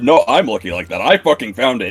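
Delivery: defensive voice. Voicing a character who insists he found the item: getting defensive. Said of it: "He starts getting a little bit defensive".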